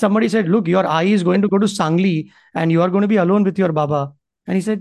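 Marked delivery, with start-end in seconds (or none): none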